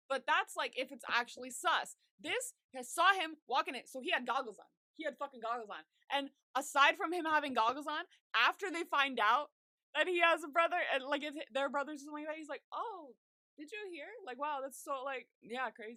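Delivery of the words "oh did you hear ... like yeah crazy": put-on naive amazement, fake innocent surprise. Retelling how someone reacted to the news: imitating feigned innocent surprise. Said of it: "he said it like he didn't even".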